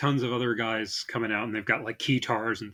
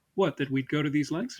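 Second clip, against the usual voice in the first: put-on British accent, pitched higher; 4 semitones higher than usual. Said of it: "speaking in a British accent".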